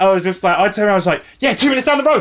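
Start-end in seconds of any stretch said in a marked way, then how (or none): 1.4-2.2 put-on, overly aggressive and confrontational, raised pitch. Retelling turning around to answer a man who saw the uniform: retelling own aggressive reply. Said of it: "Like in that in that tone".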